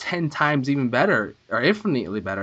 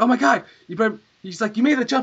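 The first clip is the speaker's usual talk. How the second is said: mock-excited tone, much higher; 8 semitones higher than usual. Describing a brother watching a video game being played, imitating someone excited. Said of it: "He was just like getting all excited".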